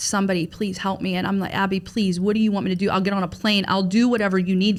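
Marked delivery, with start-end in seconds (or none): 0.0-1.1 mock, desperate pleading tone. Recalling a phone call, act out the listener's past begging for help. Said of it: "you're begging like".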